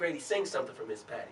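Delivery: ordinary delivery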